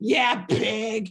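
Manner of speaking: gruff low voice. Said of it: "my alter ego".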